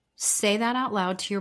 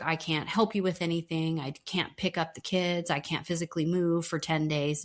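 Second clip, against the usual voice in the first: ordinary delivery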